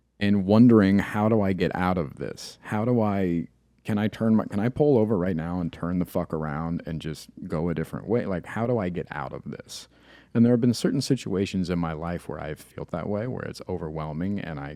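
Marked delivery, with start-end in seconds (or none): none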